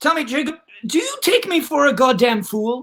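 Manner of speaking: put-on speaking in British accent. Improvising a scene, one character confronts another, speaking with a British accent. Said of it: "you're speaking with a British accent".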